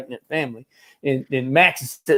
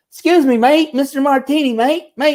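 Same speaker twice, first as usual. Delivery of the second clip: very high-pitched put-on Australian accent; 10 semitones higher, 4 dB louder than usual. Retelling knocking on a friend's door: imitating own fake Australian accent. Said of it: "trying to do an Australian accent".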